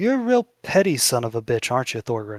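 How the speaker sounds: menacing, sinister, swooping villain character voice. Voicing a coin-flipping figure taunting a departing player: sinister character voice. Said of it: "He goes".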